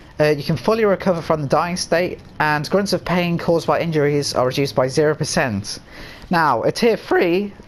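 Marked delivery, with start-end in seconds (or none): 6.3-7.5 voice cracking mid-phrase, drawn out. Explaining a game's perk tiers: voice cracking. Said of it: "don't mind that voice break".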